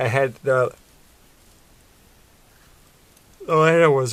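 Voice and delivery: talking through a yawn. Telling a story about a toy set, the speaker is talking through a yawn. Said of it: "sorry, I'm yawning".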